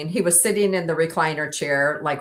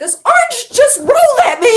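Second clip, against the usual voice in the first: startled, alarmed, high-pitched yell; 10 dB louder than usual. Retelling how you yelled at your partner after something startled you at home, put on as a startled yell. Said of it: "And I'm like yelling at him".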